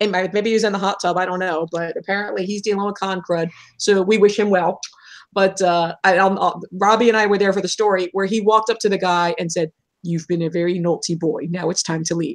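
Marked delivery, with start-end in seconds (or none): 10.0-12.4 put-on British accent, commanding and fully in charge. Retelling how Alan told a guy to leave: imitating Alan's British accent. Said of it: "this just British accent that he has".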